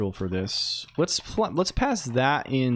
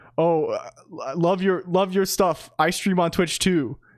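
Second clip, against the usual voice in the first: put-on awkward, nervous stammer, higher pitch; 5 semitones higher than usual. Retelling meeting someone at a booth: imitating own awkward stammering. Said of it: "I extremely awkwardly was like".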